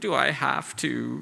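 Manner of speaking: put-on slow, whiny, reluctant-sounding child drawl.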